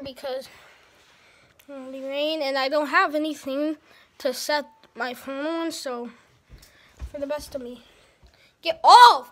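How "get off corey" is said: booming, loud, sharp yell. Filming for YouTube, telling someone to get out of the way: yelling. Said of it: "I'm sorry for yelling".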